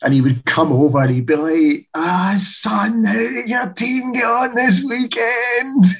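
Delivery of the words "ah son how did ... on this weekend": put-on very high, slow, thick broad Glaswegian accent. Act out a man coming over while your colleagues laugh with him, in a broad glaswegian accent. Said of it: "in that broad Glaswegian accent".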